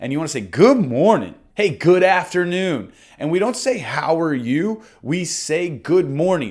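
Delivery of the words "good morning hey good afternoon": friendly, warm, upbeat voice full of positivity. Demonstrating how to greet someone you're calling, warm and positive greeting. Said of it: "say it with some warmth, with some positivity".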